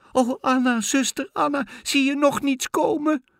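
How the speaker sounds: very high, quavering, trembling cry. Narrator reads the girl calling up again to her sister Anna, trembling voice. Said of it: "riep het meisje weer met trillende stem".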